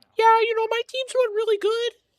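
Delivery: very high, loud, sneering, mocking put-on voice. Mocking a player who looks like he should have a deep voice: imitating Rencor mockingly. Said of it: "he's like".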